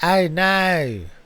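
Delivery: Australian accent, drawn-out "know". Podcast host tries again after admitting a terrible accent, in an Australian accent. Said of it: "That's better".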